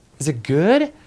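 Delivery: pitch rising upward on good. Showing bad tonality that slants up: rising pitch on good. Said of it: "That's obviously bad tonality. That's the slanting up".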